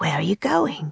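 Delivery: hushed whisper. Narrator reading a character's question as another slips away, whispering. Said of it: "Will whispered".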